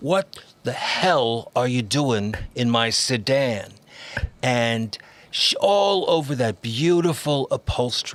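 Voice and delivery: put-on New York accent, savoring the words. Demonstrating a dialect with a line once said to a friend, New York accent. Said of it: "it still sounds like he's from New York".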